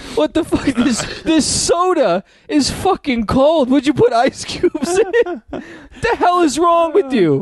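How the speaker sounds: very high, shrill, drawn-out, furious Italian voice. Acting out an Italian guy angry that supper is cold: angry Italian husband character. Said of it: "An Italian guy fucking".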